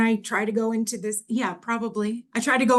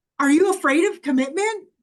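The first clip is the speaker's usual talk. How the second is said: sarcastic, biting tone, higher pitch; 6 semitones higher, 3 dB louder than usual. Acting out own past sarcastic words to a partner: imitating own sarcastic jabs.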